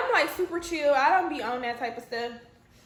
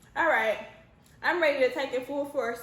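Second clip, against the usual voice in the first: normal talking voice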